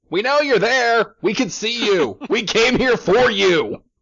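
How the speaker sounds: shrill, loud, shrieking goblin scream. The game master voices a goblin reacting to the party's glowing lights; screaming goblin voice. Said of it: "you hear a very distinct goblin voice scream".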